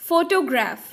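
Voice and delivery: first syllable pho- of photograph stressed. Explaining stress in photograph, stress on first syllable. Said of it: "the first one is stressed in this case".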